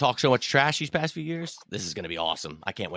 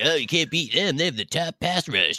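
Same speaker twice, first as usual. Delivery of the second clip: normal talking voice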